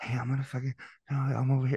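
whispering. Imitating a caller who always called from his office: imitating a caller whispering. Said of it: "there was somebody that would whisper".

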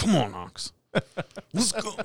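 very high, slow, swooping, drawn-out sing-song voice. Retelling telling a vet tech how to call the dog: Russell voice. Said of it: "do your Russell voice".

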